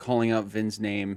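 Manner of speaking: ordinary talk, nothing marked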